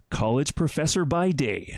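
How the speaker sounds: corny, cheesy promo announcer voice. Reading a music promo out loud in a cheesy announcer voice. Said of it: "I want to read it out loud in a kind of a cheesy announcer voice".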